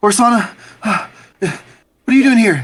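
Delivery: heavy panting. Voicing a character who nearly runs into another, panting heavily. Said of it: "she's, like, panting heavily".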